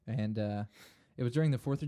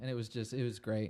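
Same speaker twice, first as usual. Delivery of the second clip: ordinary talk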